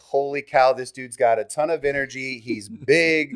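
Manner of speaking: ordinary talk, nothing marked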